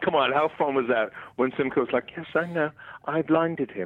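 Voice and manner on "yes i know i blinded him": slow, drawn-out, sinister villain voice. Recalling a scene from the show, doing a Simcoe impersonation. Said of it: "That was a pretty accurate Simcoe impersonation".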